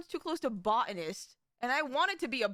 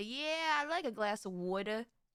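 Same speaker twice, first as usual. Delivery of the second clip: put-on Boston accent, put on; 3 semitones lower, 4 dB quieter than usual. Imitating how people up in Boston say it: imitating a Boston accent. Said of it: "up in Boston that say".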